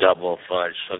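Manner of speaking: very low, dead-level, flat robotic drone. Retelling an employee answering the speaker's son: robotic flat voice. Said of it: "it sounded like a robot".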